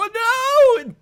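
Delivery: shocked, panicked shriek, very high and very loud. Voicing a sailor dragged overboard: NPC screaming in shock. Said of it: "the third guy screaming".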